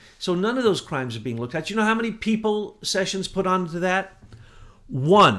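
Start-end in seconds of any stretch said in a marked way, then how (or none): 4.9-5.4 loud, barked-out yell. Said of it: "sorry I yelled so much".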